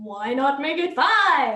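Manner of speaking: slow, sarcastic voice. Arguing about when to leave for the airport: sarcastic voice. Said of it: "that's your sarcastic voice".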